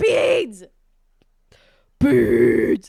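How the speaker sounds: booming bass, very deep and very loud. Speaker whose voice is low from allergies, naming a gift: very low voice. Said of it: "my voice is really low right now because I got allergies".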